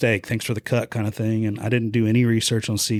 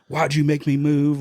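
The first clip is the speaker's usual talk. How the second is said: mock angry, accusing outcry; 4 semitones higher than usual. Retelling yelling at god while dragging a cart in the snow: retelling own angry yell. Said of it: "I'm yelling at God".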